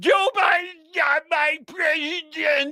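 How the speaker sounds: mock very high, dragged-out shriek. Retelling what the other side spent four years saying: imitating someone screaming. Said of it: "spent the last four years screaming".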